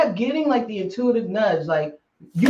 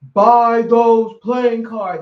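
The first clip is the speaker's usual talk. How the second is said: big, booming, slow male voice; 7 dB louder than usual. Retelling a voice heard while standing in line at a store: big booming male voice. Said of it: "this big booming male voice".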